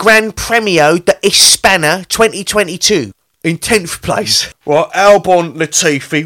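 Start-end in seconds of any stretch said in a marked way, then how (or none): 0.0-3.1 put-on rude English tourist accent. Reading race results on request as an English man on holiday: rude English tourist accent. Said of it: "An English man on holiday ordering rudely".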